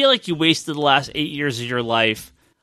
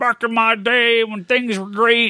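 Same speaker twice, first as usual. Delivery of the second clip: put-on higher-pitched, cranky, crotchety old man voice; 7 semitones higher than usual. Speaker warns about getting old, then does a crotchety old man voice. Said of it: "you do such a great impersonation of yourself now".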